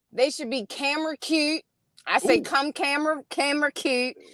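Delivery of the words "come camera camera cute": broad, thick Baltimore accent, laid on. Telling callers what to wear to a video shoot: Baltimore accent. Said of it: "I love your accent".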